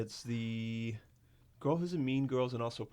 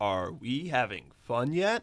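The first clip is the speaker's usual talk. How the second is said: very slow, drawn-out sing-song swooping up and down; 4 dB louder than usual. Answering a request to say a show line: Adam Scott impression. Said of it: "Can you do your best, um, Adam Scott".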